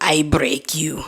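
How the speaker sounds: heavy, thick put-on Russian accent. Retelling what a woman said while grabbing his arm: thick russian accent. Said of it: "with a thick Russian accent".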